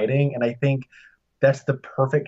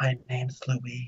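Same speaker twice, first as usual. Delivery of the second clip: barely audible, soft-spoken, very soft hushed murmur; 10 dB quieter than usual. Show how hard Amy Adams is to hear, in a soft-spoken Amy Adams impression. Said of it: "why are you speaking so softly?".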